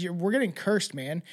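ordinary talk

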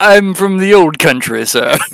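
odd, vaguely British put-on accent. Voicing a questioned character in a tabletop game, weird British-like accent. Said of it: "it's a really weird accent".

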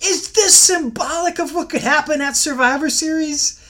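put-on very high, swooping, screaming commentator voice. Retelling a line from the commentary: imitating Michael Cole screaming. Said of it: "Michael Cole in commentary starts screaming".

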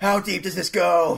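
loud, deliberately terrible snake voice. Joking with a friend about a conspiracy, terrible snake voice. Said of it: "And my terrible snake voice".

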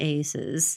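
play-acted, purely sarcastic one-word "aces". Describing a reply when someone is shorted things: acted-out sarcastic aces. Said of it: "I say aces sarcastically".

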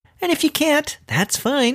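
playful, very high-pitched, passive-aggressive tone. Asking listeners for support on Patreon: playfully passive-aggressive. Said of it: "sort of passive aggressively".

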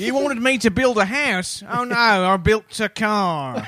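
not very good put-on Australian accent. Voicing a character being discussed with co-hosts, in a not very good Australian accent. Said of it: "That's not a very good Australian accent".

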